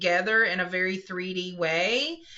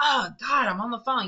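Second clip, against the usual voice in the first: mock-aggravated man's voice; 3 semitones higher than usual. Retelling how a man on the phone reacted to a woman distracting him; imitating an aggravated man. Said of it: "all aggravated because she's distracting him".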